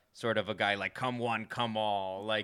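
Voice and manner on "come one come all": put-on New York accent. Describing a performer's jokes, doing his East Coast style impression. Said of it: "a New York or like an East Coast style impression".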